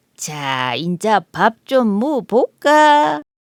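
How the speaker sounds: wolf voice laughing hard through the words. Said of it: "배를 잡고 웃은 늑대가".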